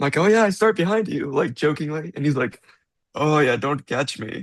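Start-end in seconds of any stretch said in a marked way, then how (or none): 3.1-4.4 slow, put-on Finnish accent. Speaker retells a man's joking reply while they chatted; Finnish accent. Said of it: "in his like Finnish accent".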